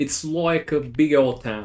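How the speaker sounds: put-on, attempted Australian accent. Asked how to say a phrase with an Australian accent, the speaker tries: Australian accent. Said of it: "How would you say that with an Australian accent?".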